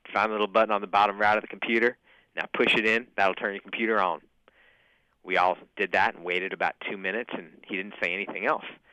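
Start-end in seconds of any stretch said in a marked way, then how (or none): 0.2-4.3 put-on strong, heavy backcountry Appalachian accent. Recalling prison, the speaker quotes the CEO's instructions in a deep Appalachian accent. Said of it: "Deep Appalachian accent".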